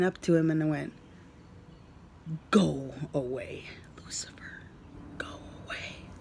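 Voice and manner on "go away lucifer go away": very soft, firm whisper.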